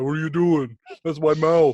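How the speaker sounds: very loud, booming voice of a talking toilet. Joking about a castle where the toilet is alive: voicing a talking toilet. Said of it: "the damn toilet looking up at me going".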